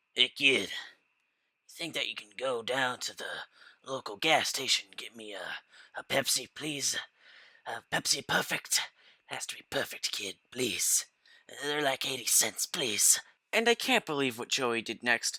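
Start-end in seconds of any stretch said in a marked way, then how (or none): 0.2-13.2 soft, sinister, very creepy put-on voice. Retelling what a man who pulled over said to a kid, in a put-on creepiest voice. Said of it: "in the creepiest voice possible".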